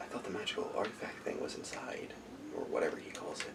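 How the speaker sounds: very quiet, muttered, whispered aside. A game narrator voices a character who whispers to himself. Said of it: "he whispers to himself".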